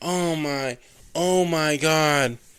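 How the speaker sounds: stiff, wooden, very slow and drawn-out bad acting. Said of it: "Neil Breen level of acting".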